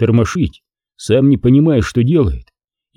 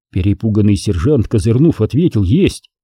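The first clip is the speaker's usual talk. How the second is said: plain reading voice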